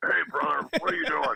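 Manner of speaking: deep, low, pushed-down voice. Showing how coworkers at every company impersonate him, in a low voice. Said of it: "make your voice low and use the word brother".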